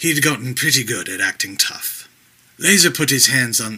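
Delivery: plain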